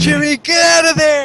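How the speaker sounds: very high-pitched, loud shouting. A player's character in a tabletop game calls to an ally in danger: yelling. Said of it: "I'm yelling".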